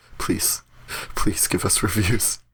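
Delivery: breathy, whispered, pleading, begging tone. Asking listeners for reviews as a joke: mock begging. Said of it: "We're begging".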